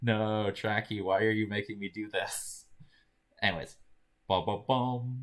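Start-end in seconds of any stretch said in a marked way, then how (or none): 0.0-2.7 put-on exasperated tone. Imitating the other speaker's reluctant reply: imitating an exasperated reply. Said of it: "the sound of exasperation in your voice".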